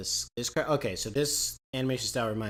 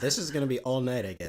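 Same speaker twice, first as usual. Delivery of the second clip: ordinary talk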